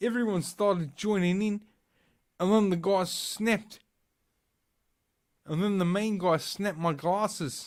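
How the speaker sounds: put-on shaky, high New Zealand accent. Retelling a man's news interview about an attack, in an attempted New Zealand accent. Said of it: "I don't think I know how to do a uh, New Zealand accent".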